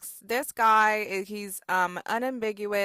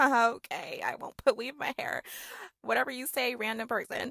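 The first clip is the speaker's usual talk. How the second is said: awkward, uncomfortable laughing through the words; 2 semitones higher, 3 dB quieter than usual. Recounting a stranger's remark about the speaker's hair, replaying the reply: retelling an uncomfortable laugh. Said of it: "I'm uncomfortably laughing".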